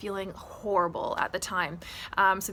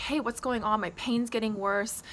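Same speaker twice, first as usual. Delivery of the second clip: usual speaking voice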